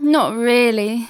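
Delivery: sad-sounding voice. Answering Aunt Mabel's question after greeting her, sounding sad. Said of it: "You sound sad".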